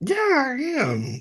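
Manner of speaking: voice jumping up very high-pitched. Answering whether excited about the reunion: voice going high while smiling. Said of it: "your voice got kinda high and you're smiling".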